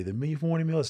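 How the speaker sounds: put-on high, rushed scream at top of lungs. Recalling having to announce the meal menu at the top of the hour: retelling a shouted menu call. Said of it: "we would have to shout and say".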